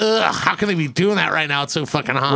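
plain

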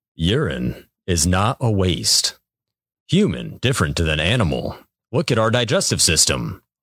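narrator voice.

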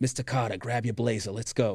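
heavy, laid-on, thick put-on Boston accent. Retelling what Barry would say to you: Barry's thick Boston accent. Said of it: "Barry has a very thick Boston accent".

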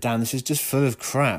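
ordinary delivery

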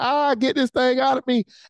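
put-on, high, crying, screaming woman's voice. Describing a mother giving natural birth: imitating a screaming mother in labor. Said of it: "she's crying, she's screaming".

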